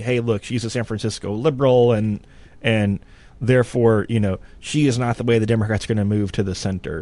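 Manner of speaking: normal talking voice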